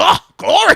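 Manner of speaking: very loud, very high Southern revival preacher praise. Recalling being called on to pray, showing an old-school Southern Pentecostal preacher voice. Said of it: "get the voice on for you one time".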